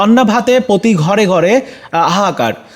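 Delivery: plain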